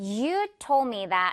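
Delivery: hard stress on YOU, drawn out very slowly.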